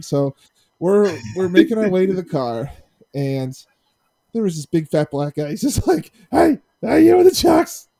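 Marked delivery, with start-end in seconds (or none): 6.3-7.8 mock drunken shout, very high, loud and rough. Retelling how a drunk man after the game called out: imitating a drunk man yelling. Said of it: "He's yelling at me".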